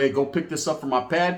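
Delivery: plain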